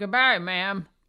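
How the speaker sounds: put-on elderly Southern woman voice. Telling a story about a sheriff, the speaker quotes him in an old Southern lady voice. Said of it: "Why does he sound like an old lady? An old Southern lady".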